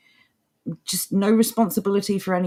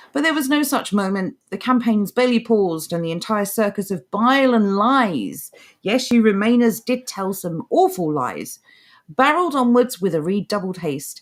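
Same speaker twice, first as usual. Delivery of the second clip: plain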